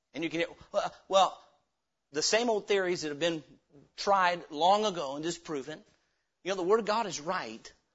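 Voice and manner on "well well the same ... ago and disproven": usual speaking voice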